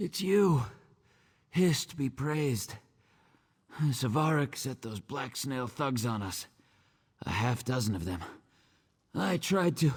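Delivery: winded, panting, very high, out-of-breath voice. Arriving after thugs attacked and took her, speak out of breath. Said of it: "Let me catch my breath".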